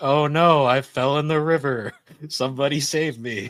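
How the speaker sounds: slow, helpless, dragged-out call. Retelling a drill scene where Lemillion plays the victim floating in a river: imitating Lemillion playing a victim. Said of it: "He's like".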